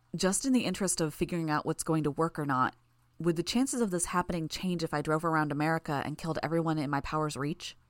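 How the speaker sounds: ordinary delivery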